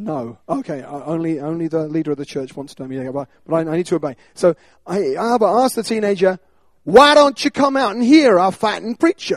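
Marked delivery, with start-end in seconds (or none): 6.8-9.4 put-on North Carolina accent. Retelling a friend inviting a teenager to hear a preacher: North Carolinian accent. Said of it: "I won't carry on with the accent".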